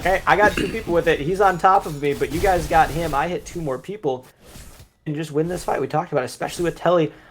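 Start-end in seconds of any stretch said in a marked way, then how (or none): none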